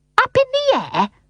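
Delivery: very high, sharp, offended, angry tone. Narrator reading Mary Poppins questioning Michael, high and angry. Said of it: "Mary Poppins's voice was high and angry".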